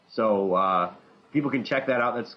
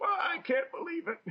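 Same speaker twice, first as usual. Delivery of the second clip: put-on very high, old-fashioned, old-timey gentleman's voice; 7 dB quieter than usual. Showing how to complain at a comic shop: old timey man voice. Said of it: "bust out your old timey man voice".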